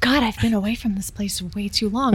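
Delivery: hushed mutter under the breath, spoken to oneself. Playing a visitor on a tour, the speaker mutters an aside: muttered under breath. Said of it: "I'll say under my breath".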